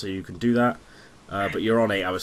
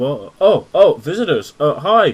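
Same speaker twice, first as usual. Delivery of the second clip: groggy, slow, pitched-up, just-woken stammer; 5 semitones higher, 10 dB louder than usual. Voicing a barwoman just woken by visitors, stuttering as she gets up. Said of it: "She kind of stutters up".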